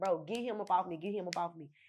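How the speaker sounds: acted-out, tearful, crying, begging voice. Retelling asking a cousin for help while pinned down: retelling a tearful plea. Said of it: "This see me with tears in my eyes".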